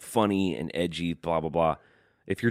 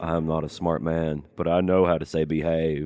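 put-on old Southern accent. Speaker explains how they said behave earlier: Forrest Gump impression. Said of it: "like an old Southern".

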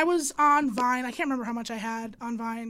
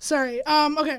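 usual speaking voice

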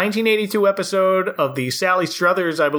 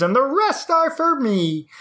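puppet frog character voice; 9 semitones higher than usual. Speaker voices a character's imagined thought, in a Kermit the Frog voice. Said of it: "i don't know why i did a kermit voice right there".

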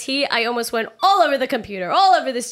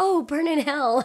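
soft, quiet, slow, understated delivery; 4 dB quieter than usual. Retelling how a film character said a line, imitating a quiet delivery. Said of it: "She said it so quietly".

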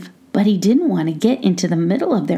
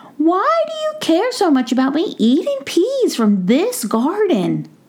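tiny, very high, squeaky little voice like a mouse; 10 semitones higher than usual. Reading a story, the narrator voices the mouse questioning the gnome: squeaky Brisbane mouse voice. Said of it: "He recognized that it was [name] the mouse, ... [name] heard a squeaky voice right outside of the coop door".

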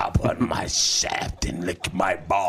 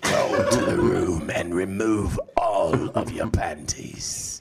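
put-on scary monster voice. After others ask for it, a speaker performs a message in a monster voice. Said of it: "Do the monster voice".

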